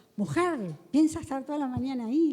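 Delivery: put-on ill-mannered, bullying rude yelling. Retelling how the foreman banged on the bathroom door: imitating a foreman yelling rudely. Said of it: "le gritaba de malos modos".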